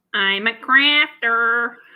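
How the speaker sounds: Midwestern American accent. Asked to test their accent on a sentence, the speaker uses a Midwestern American accent. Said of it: "test your Midwestern American accent".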